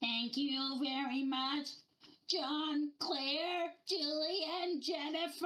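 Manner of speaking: creepy small alien voice, high and slow. Recalling the end of a theme-park ride, the speaker quotes its creepy little E.T. voice. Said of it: "thanks you in his creepy little voice".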